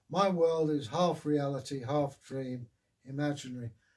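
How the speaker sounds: ordinary delivery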